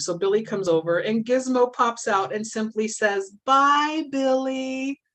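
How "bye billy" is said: small, cute, high little voice. Retelling the moment Gizmo pops out to speak to Billy: cute little Gizmo voice. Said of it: "in his cute little Gizmo voice".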